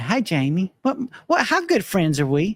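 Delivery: put-on high, swooping Kentucky accent. Retelling an employee's question to Jamie, imitating Brittany in a Kentucky accent. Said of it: "That's my Kentucky accent".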